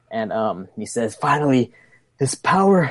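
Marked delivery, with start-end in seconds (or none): 1.1-2.9 maniacal character voice, higher. Narrating a tabletop game, speaking as Kale, laughing maniacally. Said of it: "Then Kale laughs maniacally".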